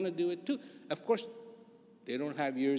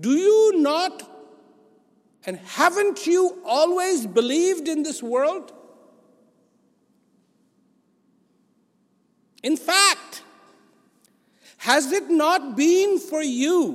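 very loud, very high, confrontational challenging voice; 12 semitones higher, 13 dB louder than usual. A speaker putting a question to the listeners: very challenging voice. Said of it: "and I say this in a very challenging voice".

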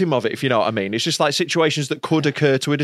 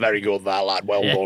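put-on old northern man's voice, lower; 7 semitones lower than usual. Retelling what the club owner says after a show: imitating an old northern club owner. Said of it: "he'll come up to you after a show with a cigar on, just be like".

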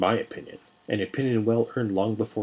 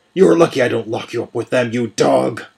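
loud, roaring, full-throated bellow; 10 dB louder than usual. A character orders a man taken away and turns on him; roaring. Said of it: "Manon roared".

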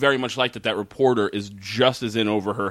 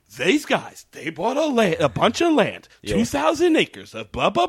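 mock childlike, poor delivery, higher pitch; 11 semitones higher than usual. Retelling how the reporter delivers her lines: imitating poor line delivery, like a child. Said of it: "And she's saying it like that".

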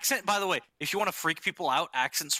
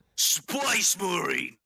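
heavy, thick Cockney accent in orc voice. Trying out an orc voice while admitting to being bad at accents, Jason Statham as an orc. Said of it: "trying to go Jason Statham if he was an orc".

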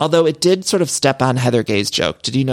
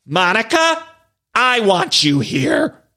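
put-on heavy delivery, much higher and slower; 6 semitones higher than usual. Retelling Whitney Wildrose's dramatic plea to Monica, in a Whitney Wildrose impression, very heavy. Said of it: "It was like very heavy".

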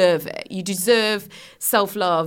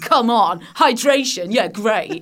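mean, dismissive and mocking tone; 3 semitones higher, 4 dB louder than usual. Acting out the inner critic mocking a small win: imitating a mean inner voice. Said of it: "Mean voice will go".

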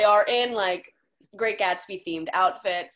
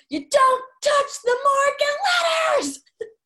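put-on, very high, shrill, out-of-control drunken scream; 5 dB louder than usual. Retelling a wasted woman's outburst at the dinner table, imitating a wasted woman's scream.

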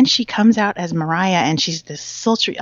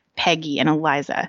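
usual speaking voice

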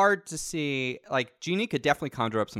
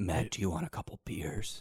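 put-on creepy voice, much lower, quieter; 8 semitones lower, 8 dB quieter than usual. Riffing on Mr. Monopoly, offering Matt a couple of beers: creepy Mr. Monopoly voice. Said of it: "This sounds like someone I should trust".

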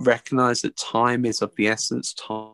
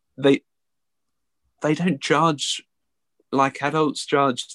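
slightly emotional, higher pitch; 3 semitones higher than usual. An educator speaking about the children they teach, a bit emotional. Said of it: "I'm getting a bit emotional".

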